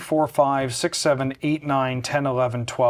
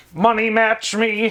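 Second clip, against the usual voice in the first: pitched-up, high machine voice; 8 semitones higher, 4 dB louder than usual. Joking about having to play from inside a Dalek machine: best Dalek impression. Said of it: "That's my best Dalek impression".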